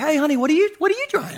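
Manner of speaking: put-on, very sugary, sweet, high voice. Retelling what his wife asked about the dryer: imitating wife speaking sweetly. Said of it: "she just says to me real sweetly".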